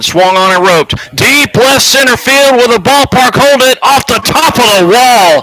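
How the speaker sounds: excited play-by-play call, high and loud.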